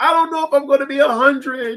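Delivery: play-acted hard crying, voice very high. Retelling crying as a child when mom walked in: retelling own past crying. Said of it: "I started crying, like, for real".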